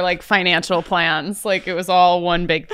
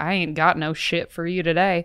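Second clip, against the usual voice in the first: put-on South Dakota accent; 4 dB quieter than usual. Joking about coming back from a trip like South Dakotan relatives, put-on South Dakotan accent. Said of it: "come back like my South Dakotan relatives and just be like".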